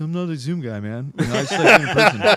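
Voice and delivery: loud, high-pitched voice. Imitating Eric who dislikes Zoom: imitating Eric. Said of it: "that was a pretty good, Eric".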